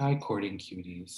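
mock-sad, a bit sultry. A host greets her viewers: put-on sad voice. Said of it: "I won't do my sad voice".

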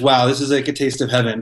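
ordinary talk, nothing marked

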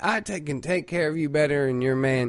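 normal talking voice

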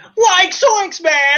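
very high-pitched cartoon character voice. Chatting about Scooby-Doo characters: Shaggy voice. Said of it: "I'm surprised I didn't get me to do the voice".

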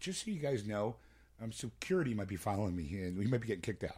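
calm, low, unbothered, matter-of-fact conversational tone. Retelling what Bob said on coming back, imitating Bob's calm tone. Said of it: "he goes like this calmly".

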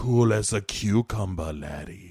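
low, hushed, menacing and ominous tone. Retelling a deal, acting out Caletri's reply in a mock-menacing voice. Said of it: "Why are you saying it all menacing like that?".

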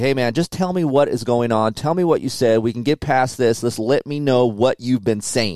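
firm, pressing tone. Retelling how another man pressed him for answers; retelling a stern raised voice. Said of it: "he kind of raised his voice a little bit and got stern".

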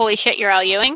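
plain

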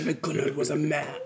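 Viking accent with saga-like storytelling delivery. Showing how the saga could be read aloud: Viking-type accent, really deep bass. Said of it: "Viking type accent, like really deep bass".

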